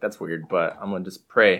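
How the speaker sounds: ordinary delivery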